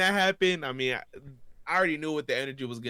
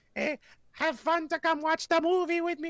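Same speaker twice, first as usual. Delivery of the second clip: very high-pitched cartoonish voice. Retelling a Mario cosplayer jumping up from the front row at a movie, Super Mario voice. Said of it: "talking in like this Super Mario voice".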